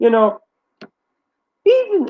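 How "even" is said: very high cracking voice break on even. A YouTuber talking to viewers about their channel, voice cracking. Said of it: "my voice is cracking there".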